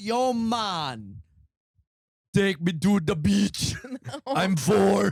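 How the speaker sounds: terrible fake Jamaican accent, man's voice, drawn out. Trading impressions with others, the speaker tries a Jamaican voice: bad Jamaican accent. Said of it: "You are the worst at impressions".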